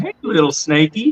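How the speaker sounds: mock hissing snake-like talk. Retelling a swamp walk, the speaker mimics a man addressing a cottonmouth: imitating his snake talk. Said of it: "like he started talking like that".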